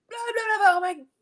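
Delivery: acted very high, frantic, panicked gibbering babble. Retelling suddenly losing it at work: imitating own past freak-out. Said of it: "totally freak out".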